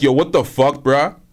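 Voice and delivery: ordinary talk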